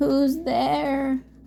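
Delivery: rough, rasping wolf voice. Reading a story, the wolf in bed answers a knock: raspy wolf voice. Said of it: "rasped the wolf".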